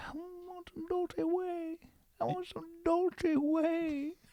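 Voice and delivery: very high, slow, drawn whale voice. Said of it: "he was saying".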